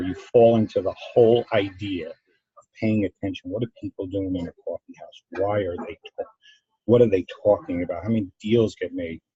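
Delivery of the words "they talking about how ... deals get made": normal talking voice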